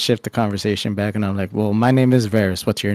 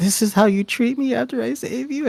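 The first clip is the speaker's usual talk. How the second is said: very high, tearful voice on the edge of crying; 13 semitones higher than usual. A player speaks as their character to the dog they saved, crying a little. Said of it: "I just start kind of crying".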